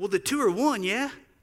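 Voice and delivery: put-on, high-pitched Australian accent. Retelling what someone told them about business, Australian accent. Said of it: "In my best Australian voice".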